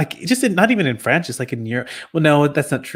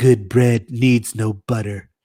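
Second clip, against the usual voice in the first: low, put-on French accent; 4 semitones lower than usual. Retelling what a man said when you asked for butter, in a French accent. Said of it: "with his French accent".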